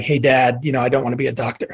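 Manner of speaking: mock nervous voice, trembling, fast and hushed. Man retells telling his father as a ten-year-old, imitating a fast, quiet, trembling reply. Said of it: "Probably said it really fast and really quietly".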